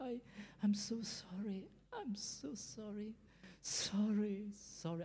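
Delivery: very slow, high, tearful half-whisper. Retelling a crying inmate apologizing to god, imitating a tearful half-whisper. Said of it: "he was whispering to himself".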